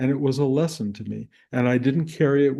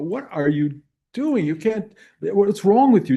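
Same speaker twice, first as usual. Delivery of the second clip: furious, angry yelling, pitched higher; 7 semitones higher, 4 dB louder than usual. Retelling confronting a truck driver who followed too close: imitating own furious yelling. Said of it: "I yelled with such anger and fury".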